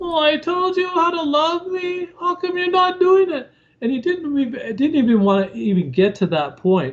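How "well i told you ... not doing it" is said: very high, nagging, whiny complaining tone. Describing what they won't say to him, the speaker demonstrates a whiny complaining voice. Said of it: "go to the whiny voice".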